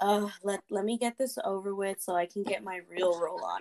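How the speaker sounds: ordinary talk, nothing marked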